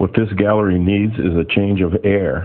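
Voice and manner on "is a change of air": ordinary talk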